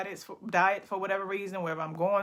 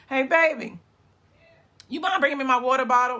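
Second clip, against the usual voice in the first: hoarse, raised, croaky voice calling out; 6 semitones higher, 8 dB louder than usual. Live on Facebook, the speaker asks for a water bottle, croaky voice. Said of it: "my voice got croaked".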